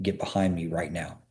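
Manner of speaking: very stern, low mutter under the breath. A parent retells speaking to the family while walking to a restaurant, retelling a stern mutter. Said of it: "under my breath, like very sternly".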